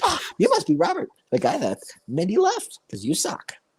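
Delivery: squeaky, swooping cartoon-character voice. Retelling what a strange man said to the speaker's dad, in a cartoon-character voice. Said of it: "that sounds like an actual cartoon character".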